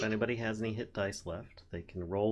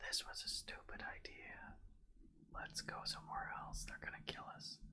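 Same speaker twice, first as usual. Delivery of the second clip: hushed, breathy, barely audible whisper; 14 dB quieter than usual. Voicing a cultist overheard whispering behind a door, in a whispering cultist voice. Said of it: "taking the part of a cultist".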